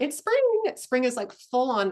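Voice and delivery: voice breaking and cracking, high and loud. Introducing this week's topic to listeners, voice cracking. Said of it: "My voice just cracked".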